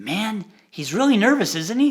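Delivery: very audible, loud, carrying stage whisper. Retelling a young lady in the front row remarking to her neighbour, loud stage whisper. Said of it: "very loud stage whisper said".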